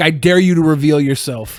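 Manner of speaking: ordinary talk, nothing marked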